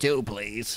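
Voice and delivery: grizzled, gruff put-on fish creature voice. Retelling a cartoon scene, a fish cuts in line and orders: put-on grizzled voice. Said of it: "grizzly grizzled voice".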